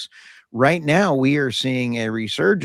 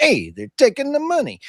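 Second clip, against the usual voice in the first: fake put-on Italian accent, pitched up; 13 semitones higher than usual. Talking about wind farm money, the speaker repeats the line: mock italian accent. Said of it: "we almost sounded like an Italian".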